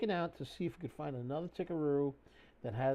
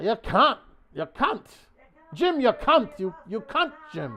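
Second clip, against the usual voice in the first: put-on Scottish accent, higher and louder; 7 semitones higher, 12 dB louder than usual. Trying out Scotty while talking to Jim, Scotty impression in a Scottish accent. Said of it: "In a Scottish accent".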